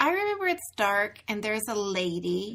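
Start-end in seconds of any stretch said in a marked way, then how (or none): none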